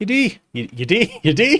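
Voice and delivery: high, loud, poorly done Irish accent. Speaker offers to show off his Irish accent: attempted Irish accent. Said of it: "That's not Irish, is it?".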